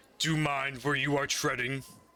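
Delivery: fast, huge creature voice. Narrating a game, the speaker voices a creature leaning over the player: creature voice. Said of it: "and the creature speaks to you".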